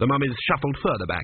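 plain

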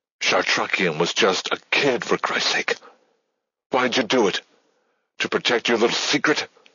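hissed, pushed-out words, accusing tone. Hale, clutching Susan, speaks into the darkness toward Strathmore, hissed. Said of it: "Hale hissed into the darkness".

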